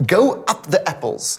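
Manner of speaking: very slow, bad attempt at a Cockney accent. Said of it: "But I'll try".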